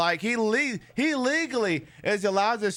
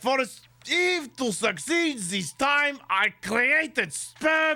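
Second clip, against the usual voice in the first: stupid, silly put-on voice, much higher; 4 semitones higher than usual. Riffing with a co-host on a podcast, in a stupid put-on voice. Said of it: "you've hit your quota for the stupid voice".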